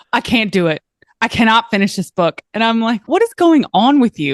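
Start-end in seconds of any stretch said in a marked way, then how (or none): 0.1-2.4 distressed, frantic, panicked outburst. Retelling a phone call from a woman reading a book, imitating someone panicking. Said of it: "she is panicking and going".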